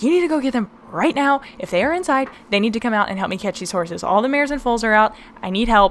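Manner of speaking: urgent, panicked, fast pleading tone.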